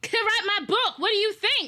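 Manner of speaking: very high-pitched, upset yelling outburst. Retelling an argument with people who won't hand over the book, acting out an upset yell. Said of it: "Why are you yelling at us?".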